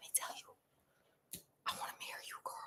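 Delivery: hushed, breathy, faint whisper, very quiet. Acting out a man who can only whisper, imitating a man whispering. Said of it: "He can only whisper".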